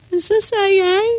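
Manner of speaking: meek, timid, very high-pitched little voice. Retelling arriving at an AA meeting, quoting own past words in a meek little voice. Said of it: "with this meek little voice said".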